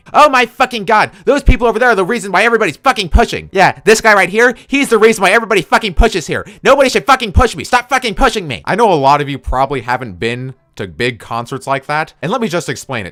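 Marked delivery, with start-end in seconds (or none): 0.1-8.6 mock very high, shrill, enraged, furious yelling. Retelling a woman at a big concert, imitating her yelling angrily at him. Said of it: "yelling at me".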